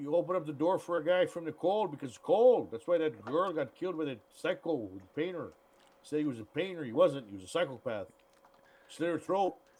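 put-on Canadian accent, put on. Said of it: "It sounds like you're doing like either a Mexican Canadian accent or a native Canadian accent".

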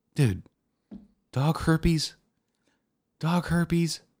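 put-on soft, deflated, defeated voice. Speaker imagines how their boss would react, imitating a dejected boss. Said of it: "my boss just real dejectedly being like".

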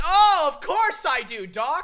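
very high, slow, drawn-out laugh of disbelief. Retelling how they answered the doctor's fracture news, retelling a laughing reply. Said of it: "I actually start laughing".

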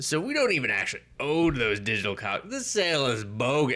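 haughty, pompous, self-important, swooping high-pitched voice. Retelling a man complaining to the speaker about a sale: mock-pompous tone. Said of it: "As pompousy too".

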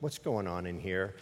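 stern tone, low and quiet.

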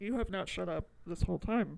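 ordinary talk, nothing marked

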